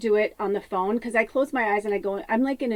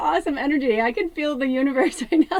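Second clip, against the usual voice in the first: high, loud laughing speech. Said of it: "I'm laughing so hard".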